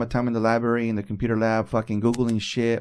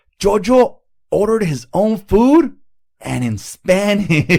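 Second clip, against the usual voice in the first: very loud, very high, thrilled, excited voice; 9 semitones higher, 8 dB louder than usual. Retelling a phone call from Nick, their kid, imitating Nick, all excited. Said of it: "he's all excited".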